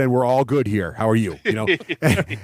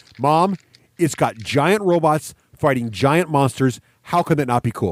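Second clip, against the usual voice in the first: ordinary talk, nothing marked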